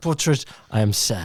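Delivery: attempted Dutch accent. Describing a sad painting and voicing its subject: Van Gogh Dutch-accent attempt. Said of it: "I was trying to get the Dutch accent".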